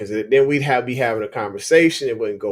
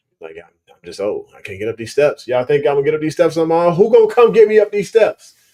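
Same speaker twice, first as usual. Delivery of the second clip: put-on raised, grumpy, complaining old man voice; 4 semitones higher, 6 dB louder than usual. Imagining how the speaker's old pit bull would act, voicing Hero as grumpy old man. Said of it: "be a grumpy old man".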